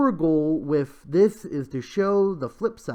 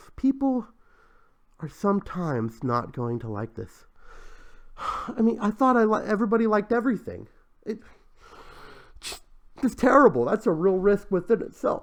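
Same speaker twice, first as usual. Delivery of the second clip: fake teary, choked-up voice; 4 semitones higher than usual. Reading out a project's listed risks, mock teary voice. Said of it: "I'm sorry, getting teary".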